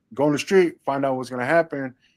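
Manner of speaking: ordinary talk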